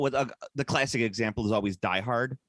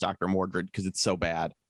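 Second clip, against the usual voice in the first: ordinary delivery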